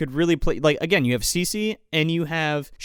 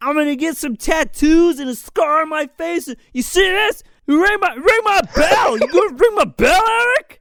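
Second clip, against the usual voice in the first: very high, loud, mock whimpering, crying wail. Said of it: "whimpering tirade".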